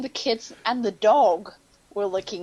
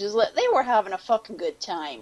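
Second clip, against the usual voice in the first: ordinary talk, nothing marked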